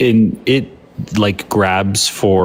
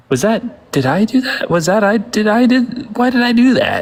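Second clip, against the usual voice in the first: very high, slow, stretched-out character voice; 13 semitones higher than usual. Quoting a loved sitcom catchphrase: Steve Urkel voice. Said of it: "He's like".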